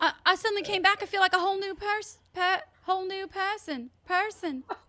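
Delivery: sudden put-on British accent, stumbling. Playing a patient who just came back to life: British accent. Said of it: "You're turning British on me".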